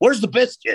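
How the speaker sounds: very high, shrill screeching scream. Retelling how a chef found his biscuit gone, imitating Mark screaming. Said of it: "just screams".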